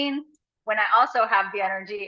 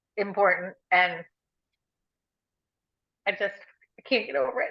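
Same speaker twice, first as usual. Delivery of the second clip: crying while talking, tearful voice. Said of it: "I'm still crying".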